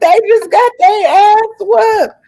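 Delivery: desperate, very high, loud crying scream.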